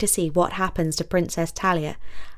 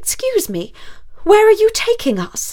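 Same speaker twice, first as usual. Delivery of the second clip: very high, sharp, raised voice; 13 semitones higher, 5 dB louder than usual. A passenger speaks to the driver as the car turns off the road, sharp voice. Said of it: "Talia say in a sharp voice to the driver".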